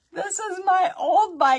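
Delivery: put-on very high, very loud, drawn-out crying wail like a child. Retelling a grandchild's upset reply about an Easter bike: imitating a child crying. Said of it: "she starts crying".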